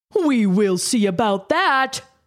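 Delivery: light, playful, mocking, teasing tone. Creighton answers Kayes on the swings at recess, teasing. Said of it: "Creighton teased".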